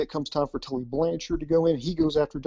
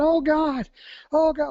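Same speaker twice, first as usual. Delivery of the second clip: shrill, very high, long-stretched, drawn-out screaming; 12 semitones higher than usual. Retelling a wrestler selling a hold in a match: imitating Arn Anderson screaming. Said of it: "you could hear him just screaming".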